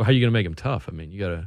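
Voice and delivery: dry, dead-straight deadpan delivery, no laugh. Speaker retells the coach's reply to him, imitating deadpan delivery. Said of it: "Coach Dick's just deadpan".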